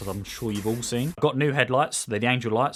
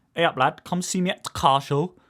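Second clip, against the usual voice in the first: terrible put-on Northern English accent, pitched higher; 5 semitones higher than usual. YouTuber inviting viewers to their car show stand, terrible Northern English accent. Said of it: "as you can hear by this terrible accent".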